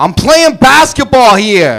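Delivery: put-on New York accent with swooping pitch. Doing a run of impressions, play a New Yorker playing basketball, as an impression of a New Yorker. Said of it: "a New Yorker playing basketball".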